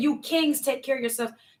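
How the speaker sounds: plain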